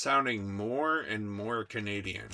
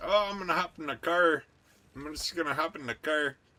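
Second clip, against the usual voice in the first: put-on Canadian voice; 6 semitones higher, 3 dB louder than usual. Joking about a listener in Canada, imitating Canadians. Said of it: "you know when can- Canadians, right? They're like".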